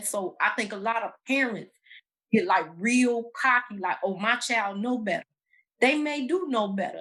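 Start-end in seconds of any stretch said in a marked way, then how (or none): none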